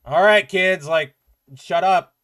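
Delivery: sarcastic brush-off.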